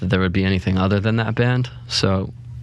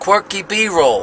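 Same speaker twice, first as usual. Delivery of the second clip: very high, bad put-on New Jersey accent; 12 semitones higher, 4 dB louder than usual. Saying the name as if someone from Jersey, in the worst Jersey accent ever. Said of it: "Like the worst Jersey accent ever".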